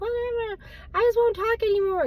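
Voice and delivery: irritated, annoyed, gripey, dismissive, pitched way up. Retelling the husband's reply when told to work on his tone, mimicking husband's gripey tone. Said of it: "my husband was kind of gripey".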